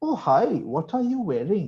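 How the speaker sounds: exaggerated Indian English accent. Describing how characters in a game speak English, in an Apu-style Indian accent. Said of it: "of what Indians sound like".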